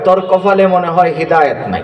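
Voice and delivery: plain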